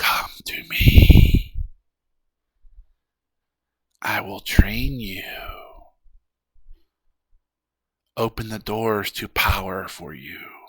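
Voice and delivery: whispery voice with slight sibilant hiss. A being speaking through telepathy calls someone to it, slight hissing, whispery voice. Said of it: "a slight hissing, whispery voice".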